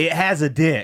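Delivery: distressed, very upset woman's voice. Retelling what a woman at a spa kept saying: imitating an upset woman. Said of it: "was very upset".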